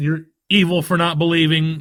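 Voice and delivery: ordinary talk, nothing marked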